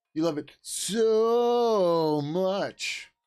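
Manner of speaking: very slow, high, drawn-out heavy sarcasm. Rereading a chat line after failing to sound sarcastic: sarcastic. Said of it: "I failed at getting the sarcasm in there".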